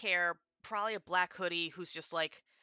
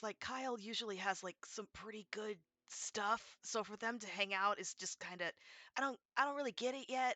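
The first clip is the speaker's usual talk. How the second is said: secretive, soft, hushed stage half-whisper; 4 semitones higher, 6 dB quieter than usual. Warning the listener about someone, half-whispering. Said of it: "I'm gonna whisper this because".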